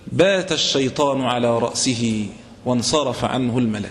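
plain

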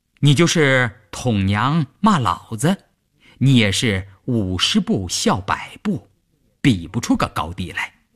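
ordinary talk

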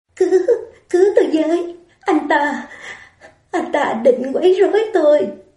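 shaky, quavering, trembling voice. Mạch Khiết clutches Lý Mộng Long's shirt and begs him for help: trembling voice. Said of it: "giọng run rẩy nói".

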